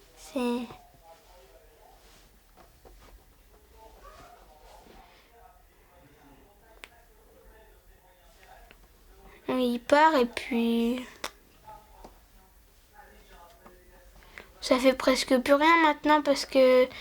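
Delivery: talking through tears, crying. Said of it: "tu pleures".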